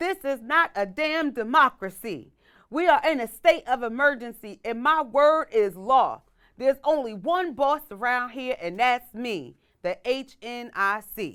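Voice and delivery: very slow, confident delivery. Reading a movie quote for others to guess: confident movie line reading. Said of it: "You said it like you was confident".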